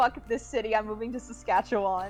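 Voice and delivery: ordinary talk, nothing marked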